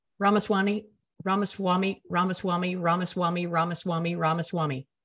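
normal talking voice

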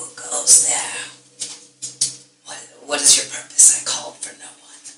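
hushed, soft whisper. Game master voicing a voice in a player's head questioning a visitor; whispering. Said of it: "a voice kind of whispers in your head".

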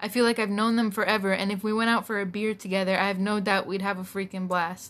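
ordinary talk

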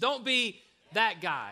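emphatic, "be" stressed slow and wide.

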